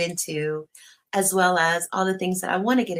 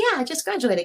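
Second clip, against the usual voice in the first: high, bubbly, ditzy happy excited chirp; 9 semitones higher than usual. Retelling answering a coworker about graduating: imitating own ditzy happy tone. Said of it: "'cause I'm all ditzy and happy".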